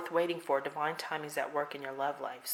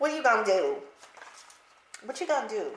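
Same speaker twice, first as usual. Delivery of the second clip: put-on elderly grandma voice, high, raised and loud; 6 semitones higher, 6 dB louder than usual. The speaker notices they sound like their grandma: imitating grandma. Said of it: "Sound like my grandma".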